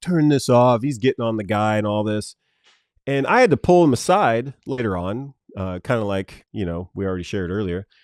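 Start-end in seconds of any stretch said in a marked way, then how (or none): none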